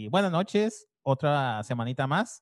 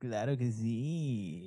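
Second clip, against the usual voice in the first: Tijuana radio announcer delivery, drawn-out sí; 3 semitones lower, 7 dB quieter than usual. Answering a greeting on a sports news show: Tijuana radio announcer voice. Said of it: "andas con voz de locutor de Tijuana".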